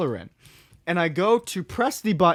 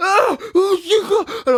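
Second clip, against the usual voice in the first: put-on screaming, higher and louder; 14 semitones higher, 8 dB louder than usual. Retelling running back to Asa and Maddie: imitating own past screaming. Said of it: "I'm screaming with a Wild Cherry Pepsi".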